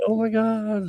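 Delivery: acted-out weepy sobbing, high, tearful crying voice. Retelling a niece reading a card: imitating someone crying. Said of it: "just started crying".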